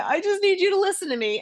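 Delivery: mock crying, high, sobbing through tears. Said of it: "just started crying and saying".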